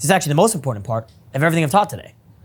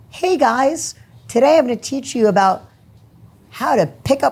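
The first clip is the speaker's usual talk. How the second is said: anxious, unsure, nervous and pitched-up start; 7 semitones higher than usual. Speaking to an audience, the speaker shows how they sound when nervous: nervous voice. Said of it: "If I'm all nervous".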